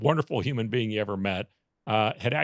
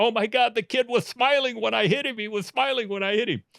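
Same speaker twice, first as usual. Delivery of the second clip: put-on very high, frantic, panicked screaming; 12 semitones higher, 3 dB louder than usual. Retelling a prank where the driver runs out: imitating someone screaming in panic. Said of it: "he's screaming. He's going".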